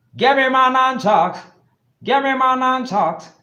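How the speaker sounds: put-on Jamaican accent. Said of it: "I'ma try and do it with a Jamaican accent".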